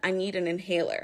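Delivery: plain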